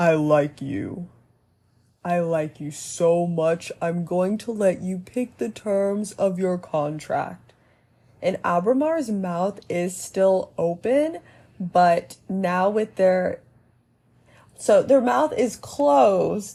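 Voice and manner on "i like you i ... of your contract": deep, lowered put-on creature voice. Storyteller voices a being addressing someone, deeper voice for a being. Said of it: "I'm giving them a deeper voice".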